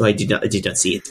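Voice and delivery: put-on French accent. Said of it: "Of course, the French accent".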